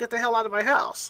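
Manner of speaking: ordinary talk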